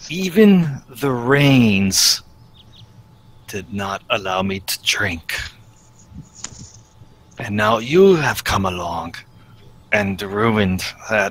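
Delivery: put-on, very deep, very low-pitched voice. Narrating a man who opens his eyes and looks at you: very deep voice. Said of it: "in a very deep voice".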